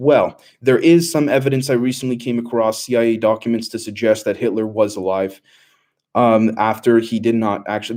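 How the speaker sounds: ordinary talk, nothing marked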